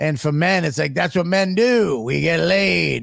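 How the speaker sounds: put-on elderly French-accented man voice.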